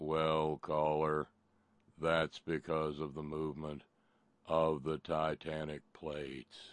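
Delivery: low, level, droning monotone. Retelling how Steve answered a caller's question, in Steve's droning monotone. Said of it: "in that absolutely mind-bending monotone".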